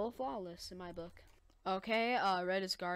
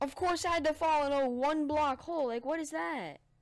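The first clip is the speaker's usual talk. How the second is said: loud, fed-up, exasperated, frustrated outburst; 8 semitones higher, 7 dB louder than usual. Player venting after falling into a one block hole in a game, frustrated and mad. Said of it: "I'm so mad".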